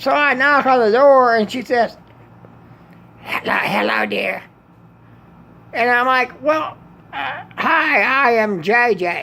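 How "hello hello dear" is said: put-on rough, scratchy, raspy, creaky old-lady voice. Retelling the woman who answered the door greeting him, imitating Mildred's raspy voice. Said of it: "the aunt or the grandma with the raspy voice".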